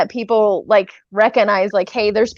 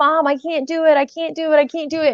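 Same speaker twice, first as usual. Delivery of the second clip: desperate, high-pitched pleading scream, near tears; 7 semitones higher than usual. Retelling a scene where a daughter screams to her mom: mock screaming plea. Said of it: "she's like screaming".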